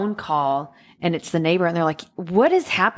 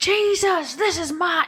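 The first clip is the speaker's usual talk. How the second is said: put-on furious shout, very high; 12 semitones higher than usual. Recounting how a man yelled at God upstairs at his mom's house, retelling someone yelling at God. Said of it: "he's yelling like".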